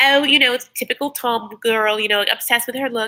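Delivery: poor put-on English accent. Retelling what the sister said about Tom's look: bad English accent. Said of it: "I can't do this accent right now. I'm so bad".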